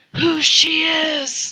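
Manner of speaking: voiced, high-pitched, theatrical stage whisper. Half-whispering a question to Bruenor in the game: half-whispering. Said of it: "I'm gonna whisper to Bruenor".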